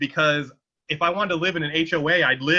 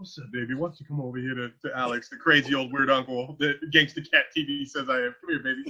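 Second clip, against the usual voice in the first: hushed, soft, come-hither bedroom murmur, stage whisper; 5 dB quieter than usual. Pretending to only be able to half-whisper, calling someone over: pretend half-whispering. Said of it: "only be able to whisper".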